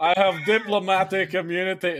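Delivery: botched South African accent that comes out Scottish. Quoting a movie villain's line in an attempted South African accent: Scottish-sounding accent. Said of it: "that's fucking Scottish there".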